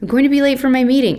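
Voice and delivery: hurried, cross, angry, high-pitched voice. A mother calls up the stairs to her child, rushed and angry. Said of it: "She sounded rushed and angry".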